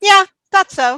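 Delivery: piercing, very high, very loud, shrill cry. Voicing a voice heard echoing down a hallway: loud Orkilia voice. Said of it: "a voice that sounds like Orkilia saying".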